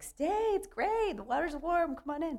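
coaxing, comedic delivery. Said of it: "And comedy is like".

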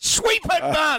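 very high-pitched shout, acted out. Retelling a coach shouting advice during a game: imitating Andrew Smith shouting. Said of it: "wandered down and shouted".

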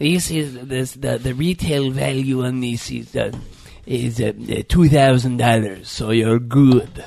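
very low, halting, dragged bad-comedy carny voice. Acting out a carnival worker quoting retail value: bad Adam Sandler character voice. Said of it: "They sound like a bad Adam Sandler character".

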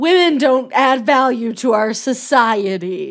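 put-on heavy sarcasm. Repeating another speaker's joking remark back: imitating heavy sarcasm. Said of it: "sarcasm level of twelve when you're saying that".

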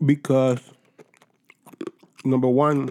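talking while chewing ice on the mic. Starting to explain a rivalry, while chewing ice on the mic. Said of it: "I'm like chewing ice on the mic".

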